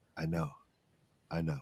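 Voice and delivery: hushed, very quiet, soft-spoken, barely above breath. Speaking in character while putting arms around two companions: said quietly. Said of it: "and I quietly say".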